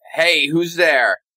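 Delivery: barked, commanding yell full of authority. A tabletop player draws a sword and calls out to whoever is there, an authoritative yell. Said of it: "I'm gonna yell out like".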